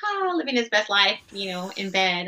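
plain

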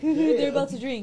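words spoken through acted laughter, high and loud. Retelling how another person laughed about the drinks: imitating someone laughing. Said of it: "he's laughing like".

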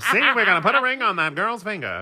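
put-on old-time radio announcer voice, pitched very high. A speaker mocks the question people ask about marriage: old-time radio announcer voice. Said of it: "I became an old time radio announcer".

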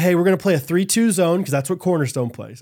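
plain

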